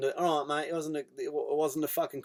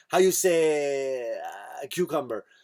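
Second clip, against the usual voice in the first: very slow, stretched-out put-on French accent. Retelling how a woman forgot the word cucumber: French accent. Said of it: "I did French accent".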